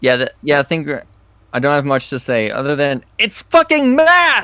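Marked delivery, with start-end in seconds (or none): 3.2-4.4 drawn-out, swooping reviewer voice. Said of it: "Why do you sound like the nostalgia critic".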